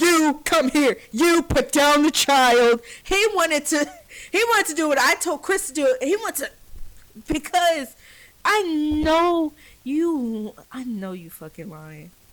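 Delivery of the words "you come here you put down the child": commanding, authoritative police officer voice. Reacting to an arrest video, repeating the officer's words: imitating the cop's tone. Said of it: "You could hear it in the cop's tone".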